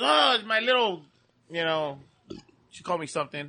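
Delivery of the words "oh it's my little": put-on elderly grandmother's voice. Retelling what a grandmother says at the door: imitating grandma Josie. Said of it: "And she goes".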